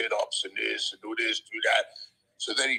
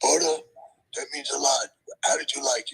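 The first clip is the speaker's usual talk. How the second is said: high, rough, raspy wrestler voice; 4 dB louder than usual. Retelling a chat at a bar after a show: Jimmy Snuka impression. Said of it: "that's my impression of Jimmy".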